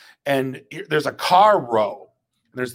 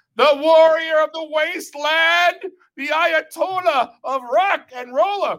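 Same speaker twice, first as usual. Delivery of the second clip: acted shrill, slow, high, drawn-out shouting. Retelling standing on it with the hockey mask, reenacting their own yell. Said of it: "I start yelling like".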